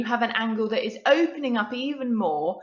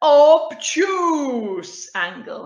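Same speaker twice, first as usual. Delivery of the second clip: loud, pitched-up, silly, greedy cartoon voice; 5 semitones higher, 8 dB louder than usual. Teaching angles, saying the angle's name in a funny voice. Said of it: "if you say it in that funny voice".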